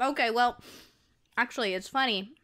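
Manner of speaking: speaking while chewing, mouth full. In conversation, starting a story while picking at a snack: talking while chewing. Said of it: "I'm like chewing while I'm talking".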